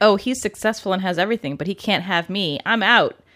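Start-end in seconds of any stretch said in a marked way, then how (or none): none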